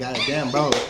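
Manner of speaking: play-acted, light, mild yelling into the mic. Imitating a co-host's podcast intro: imitating someone yelling. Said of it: "This man yelling in the mic like".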